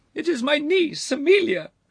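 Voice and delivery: very high, loud exclaiming outcry. A lady addressing a lord about her niece, cried out. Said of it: "cried the lady".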